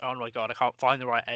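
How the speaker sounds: ordinary talk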